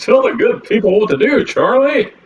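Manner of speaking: very high, put-on, announcer-style radio voice. Wrapping this one up, put-on radio voice. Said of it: "This is my radio voice".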